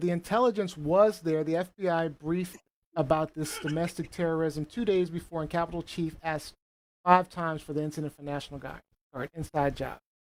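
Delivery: ordinary talk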